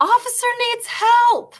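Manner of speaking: very high screaming cry. Retelling a stuck moment in a police car, imitating a colleague screaming. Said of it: "she screams".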